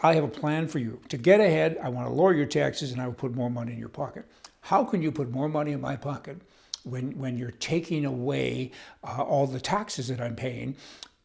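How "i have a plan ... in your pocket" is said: plain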